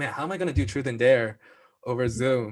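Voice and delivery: ordinary delivery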